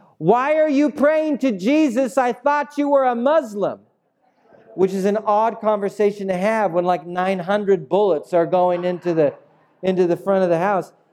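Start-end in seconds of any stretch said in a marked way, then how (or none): 0.2-3.8 full-on, high, shrieking scream. Retelling what a woman screamed while bullets hit the house, imitating her screaming. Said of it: "she's screaming at me and she's screaming".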